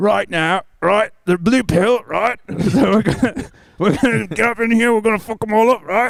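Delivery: put-on British accent. Asked to do the line in a British accent: put-on British accent. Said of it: "Do it in a British accent".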